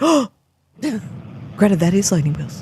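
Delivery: mock starstruck, awed gushing with swooping pitch. Retelling what Mother said on seeing someone, mock-starstruck awe. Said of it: "Like she's totally starstruck".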